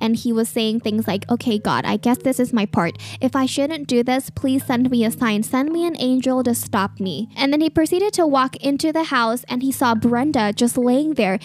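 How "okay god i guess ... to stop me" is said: normal talking voice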